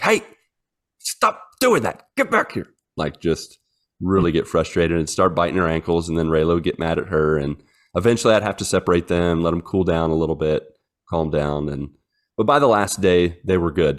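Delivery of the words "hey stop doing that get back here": mock, very high-pitched puppy yelling voice. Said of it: "Molly would just yell at her, be like".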